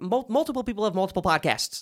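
said very fast. Bickering with a co-host about having other podcasts, said really fast. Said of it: "I said that really fast".

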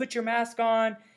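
high, slow mock yell. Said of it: "she started yelling at us".

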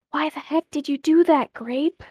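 muttered under breath. Narrating a story where Ash speaks to Grape, muttered under her breath. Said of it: "under her breath".

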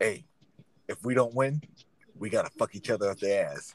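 dead serious, grave tone in a low voice. Retelling what a friend said during a video game: imitating a friend, dead serious. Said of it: "with the most dead serious face and says".

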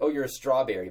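normal talking voice

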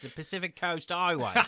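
London Cockney accent throughout. Saying the road's full name: cockney accent. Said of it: "In a Cockney accent".

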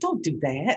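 grandmotherly, grandma-like voice. Scolding oneself for picking a fight, talking like my grandma. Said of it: "now I'm talking to myself like my grandma".

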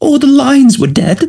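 mock, very high, tearful crying voice. Retelling a witness's testimony, the speaker is imitating her crying. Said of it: "she's crying in the witness box saying".

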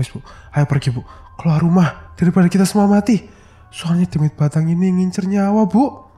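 pressing, urgent. Narrator reads Wagiman telling his wife to flee the house, hurried. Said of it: "kata Wagiman terburu-buru".

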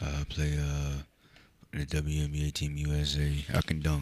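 very deep, slow voice. Joking about a WNBA player, imitating Brittney Griner in a deep voice. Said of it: "her voice is deeper than everybody in here".

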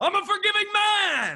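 high, slow, stretched-out yell. Retelling a movie villain's rant: imitating Maxwell Lord yelling. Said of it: "when he yelled out".

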